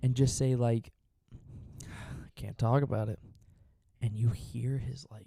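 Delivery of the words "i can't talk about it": mock defeated, resigned, beaten-down, given-up delivery. Imitating a friend over Discord: imitating John sounding defeated. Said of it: "when he would just kinda sound defeated".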